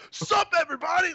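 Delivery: put-on sudden pumped-up, very high, swooping, drawn-out. Retelling how the host suddenly greeted everyone: imitating a sudden excited greeting. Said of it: "all of a sudden you're like".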